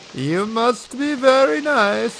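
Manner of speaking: very high-pitched, clumsy, fake German accent. Attempting the german voice another participant usually does, in a bad fake german accent. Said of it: "his German voice to tell us".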